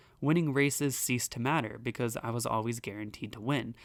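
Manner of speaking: plain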